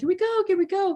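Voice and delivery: put-on very high, childish pleading little kid voice. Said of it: "pleading my mom again".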